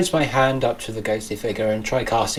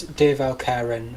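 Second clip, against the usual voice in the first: ordinary delivery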